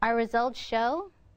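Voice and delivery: rising, upward inflection at the end on "show". Illustrating upward inflection that makes a statement sound like a question, rising on show. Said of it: "This upward inflection".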